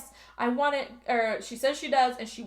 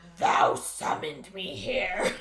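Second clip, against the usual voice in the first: low, eerie, ghostly, super spooky put-on voice; 4 semitones lower than usual. Retelling what a summoned hooded figure said, super spooky voice. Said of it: "like super spooky voice".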